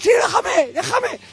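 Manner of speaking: desperate shout, way up high.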